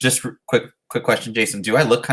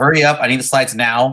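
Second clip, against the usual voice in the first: mock bossy tone, higher; 3 semitones higher, 3 dB louder than usual. Retelling how a friend gives orders: imitating a bossy friend. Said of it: "he just bosses me around".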